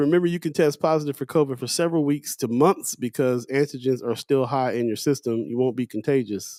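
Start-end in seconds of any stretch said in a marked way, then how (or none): none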